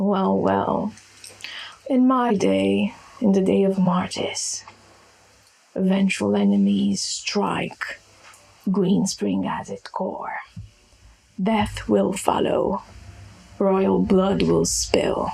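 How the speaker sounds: deep, low-pitched voice. Voicing Martis warning of threats and death: deep voice. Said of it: "he cracks his muscle torso as he speaks with a deep voice".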